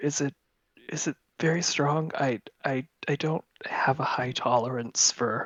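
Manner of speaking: whispering voice. Playing Basil asking a server quietly about a drink: whisper.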